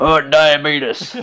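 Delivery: the word "diabetes" delivered in a mocking manner. Showing a standard mocking way to say diabetes: Wilford Brimley diabetes. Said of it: "my standard, like, mocking use of the word".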